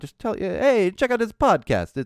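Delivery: sudden put-on Italian accent, pitched way up. A podcast host asks listeners to tell friends about the show, sudden italian accent. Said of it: "I don't know why I had an Italian accent all of a sudden".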